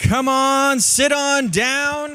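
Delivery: drawn-out auctioneer voice. Inviting a guest to sit down, auctioneer voice. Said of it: "That was my uh, auctioneer voice".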